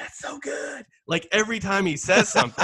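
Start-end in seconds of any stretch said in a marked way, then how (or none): 0.0-0.8 high, soft murmuring woman's voice. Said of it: "you can hear going".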